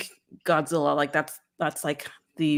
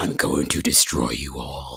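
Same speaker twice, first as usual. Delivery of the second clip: very low, slow monster voice. Imagining what the monster would say: Shin Godzilla voice. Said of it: "I could just imagine him going".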